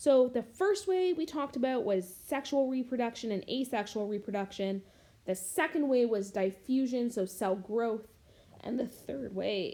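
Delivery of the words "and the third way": voice cracking. Listing the third of several ways, voice cracking. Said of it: "excuse my voice crack".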